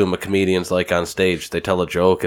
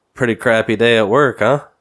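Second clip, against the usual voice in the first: raised-pitch, snarky, sarcastic teasing tone; 5 semitones higher, 5 dB louder than usual. Retelling a jab at a snippy Greg in front of others, retelling a sarcastic remark. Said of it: "and I'm sarcastic".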